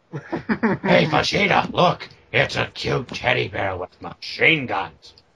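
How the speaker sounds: slow put-on voice, every word drawn out. Doing a Nappa bit for the others: Nappa voice. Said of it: "You do actually do a pretty good Nappa".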